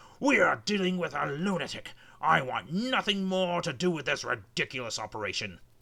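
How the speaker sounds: enraged, blustering outcry. Reading a story aloud, the narrator voices the army general addressing the Queen, furious cry. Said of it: "cried the general. / he cried".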